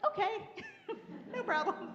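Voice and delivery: breezy okay, high-pitched and laughing.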